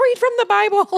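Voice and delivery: put-on shrill, loud, very high-pitched scream. Retelling an order shouted at a friend: imitating someone screaming.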